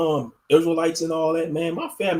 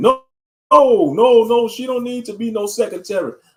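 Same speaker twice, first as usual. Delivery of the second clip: raised, high-pitched, protesting, shutting-down tone; 6 semitones higher, 5 dB louder than usual. Acting out a husband turning down the pastor's offer: imitating a husband refusing. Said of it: "her husband will be like".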